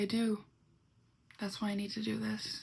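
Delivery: mock cold, empty, flat tone. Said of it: "the way I'm saying it is, like, the way he said it".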